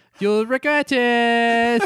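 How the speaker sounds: very high put-on weird British accent, "it" drawn out. Quoting the evil AI girl's warning: imitating her weird British accent. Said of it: "pretty accurate, uh, portrayal of her accent".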